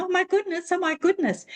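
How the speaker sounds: very high, piercing screaming. Retelling how a woman at a course started screaming, imitating a woman screaming. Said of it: "start screaming".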